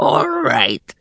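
rasping, hoarse goblin voice. Reading a story aloud, the narrator voices a goblin speaking to Rhea, rasping. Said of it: "rasped the goblin".

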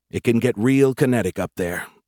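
ordinary talk

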